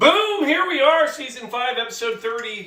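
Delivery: very high-pitched, loud shouted yell. Opening an episode at home: yelling. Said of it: "Why do I yell?".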